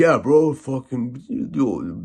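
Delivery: slow, burned-out, spaced-out dude drawl. Retelling talks with burned-out people in jail: imitating a burned-out jail inmate. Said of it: "they literally sound like that".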